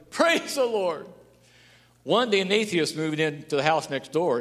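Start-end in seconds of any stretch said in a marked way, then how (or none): 0.1-1.0 shouted out, high and ringing. Telling a joke, the old lady greets the sky each morning: shouted. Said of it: "and shouted".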